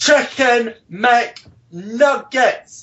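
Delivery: acted, high yelling at top of lungs. Telling of an order in a McDonald's in France, retelling a shout at full voice. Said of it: "shouting at the top of my voice".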